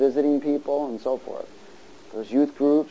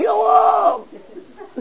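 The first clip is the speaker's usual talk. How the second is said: cartoon voice, very high, slow, shouted yelling cry. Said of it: "Jonah was all".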